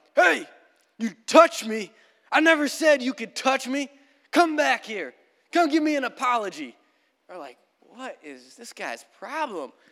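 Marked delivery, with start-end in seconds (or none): 0.1-6.7 loud, high-pitched hollering. Telling a story from a hike, retelling another hiker's yell. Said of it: "we hear that other hiker yell".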